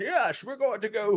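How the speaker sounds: put-on high-pitched old British fighter voice. Explaining how an actor created a voice from watching a boxer, in an old British boxer, Bane voice. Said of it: "the way that dude talked was like Bane".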